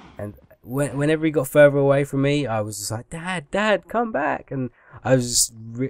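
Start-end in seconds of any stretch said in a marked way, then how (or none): 3.1-4.5 put-on tearful crying out, high and drawn-out. Retelling calling after their dad riding away: retelling tearful calling. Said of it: "I just started crying so bad".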